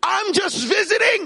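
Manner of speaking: very high-pitched screaming. Retelling a man's protest during a police raid: imitating someone screaming. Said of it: "he's screaming".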